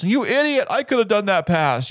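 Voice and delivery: mock shrill, high-pitched screaming rant. Imitating couch fans at the tv during football: imitating someone screaming. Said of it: "are screaming at the T V from their couch".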